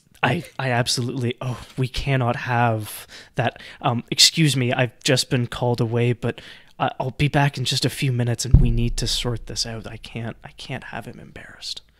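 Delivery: secretive, confiding, conspiratorial stage whisper. Voicing a woman character mid-scene, in a conspiratorial half-whisper. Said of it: "she lowers her voice to like a conspiratorial whisper".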